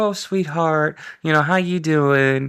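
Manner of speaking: very sweet, kindly manner. Retelling what a woman would say to people, imitating her sweet manner. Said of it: "but she was very sweet".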